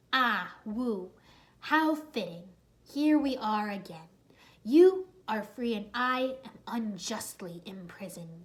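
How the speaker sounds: every word hissed, slithering, snake-like villain voice. Reading a story, voicing the imprisoned Asphyra speaking to Wu through the glass, hissing. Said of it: "she hissed".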